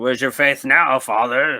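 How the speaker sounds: put-on loud, demanding, commanding tone. Retelling a line from a movie scene to the father: imitating a demanding voice. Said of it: "she started talking in the demanding voice".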